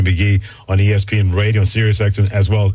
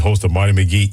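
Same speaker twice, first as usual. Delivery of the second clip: ordinary delivery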